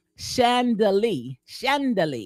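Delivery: slow, drawn-out Southern-accent "chandelier".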